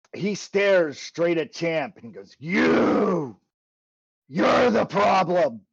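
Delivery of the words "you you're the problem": loud, resounding, intimidating, booming undead voice. Narrating a game, voicing the Lich as it stares at a player: booming voice. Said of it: "he booms in your head".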